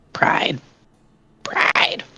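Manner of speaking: very raspy, breathy, whispered calling out. Game character String calls out to Pride, in a very raspy tone. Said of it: "like in a very raspy tone".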